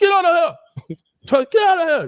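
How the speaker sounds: put-on crazy, very high, swooping Haitian accent. Retelling how the father chased him off the block: imitating father's crazy Haitian voice. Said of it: "Haitian, crazy voice".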